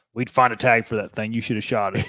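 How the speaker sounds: put-on voice of an upset old man. Retelling what an upset grandfather said about passing bucks: imitating an upset grandpa. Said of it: "he was upset".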